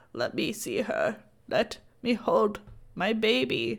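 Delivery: put-on weak whisper. Retelling a scene as Bella, just able to breathe again, whispering and croaking. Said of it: "she whispers and croaks".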